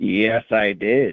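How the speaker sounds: suggestive, seductive come-hither bedroom voice. Confirming to the other speaker a movie seen last night: bedroom voice. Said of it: "Why did you give me bedroom voice?".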